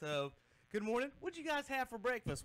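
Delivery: breathless, winded, very high-pitched voice. Greeting the others after running up and down the hallway several times, out of breath. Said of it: "So let me catch my breath".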